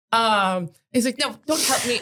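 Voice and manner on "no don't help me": put-on British accent. Quoting what he said to friends, in a put-on british accent. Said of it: "our British accents are amazing".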